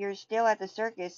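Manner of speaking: ordinary delivery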